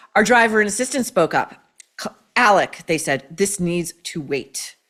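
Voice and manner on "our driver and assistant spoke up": plain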